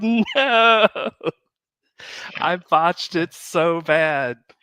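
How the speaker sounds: acted out, very slow, crushed, devastated dismay. Retelling a past reaction to a mistake: retelling being devastated. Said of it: "And I was devastated".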